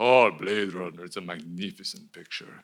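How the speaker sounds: put-on deep Italian-accented vampire voice. Retelling what his uncle said about Blade Runner: imitating his uncle's voice. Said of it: "talk like an Italian version of Dracula".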